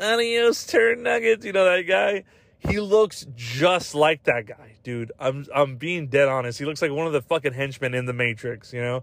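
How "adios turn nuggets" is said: high, creaky robot voice. Imitating the robot-like guy from Grandma's Boy: robotic voice. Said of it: "like a robot".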